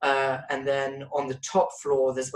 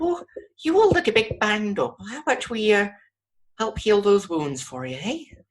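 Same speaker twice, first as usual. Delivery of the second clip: small Irish woman's voice, high and swooping; 7 semitones higher, 4 dB louder than usual. Voicing a nurse who offers to heal the party: small Irish lady character. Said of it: "small, uh, looking Irish lady, and she goes".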